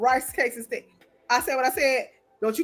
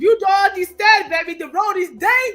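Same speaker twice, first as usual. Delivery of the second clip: put-on dramatic worried voice, much higher, louder; 6 semitones higher, 6 dB louder than usual. A wife retells her stressed husband's warning about the road, imitating dramatic worried husband. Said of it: "He makes it seem so dramatic".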